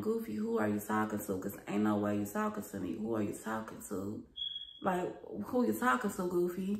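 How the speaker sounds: calm and very stern. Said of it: "I was calm and, like, real stern".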